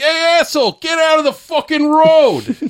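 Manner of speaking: angry, gruff, very high, thick put-on New York yell. Acting out a typical New Yorker from popular culture: mock angry New Yorker, thick accent. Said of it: "He's got kind of a thick accent".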